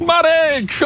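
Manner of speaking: high mock shout.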